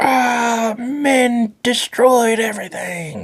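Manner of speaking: mock very high top-of-lungs scream, drawn-out ah. Describing a fake women's empowerment movement, imitating women screaming. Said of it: "women just screaming at the top of their lungs".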